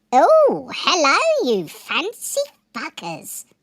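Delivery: very high, loud, swooping sing-song put-on voice. Greeting someone in a put-on voice: Jonathan Stevie voice. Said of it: "let's do it in a Jonathan Stevie voice".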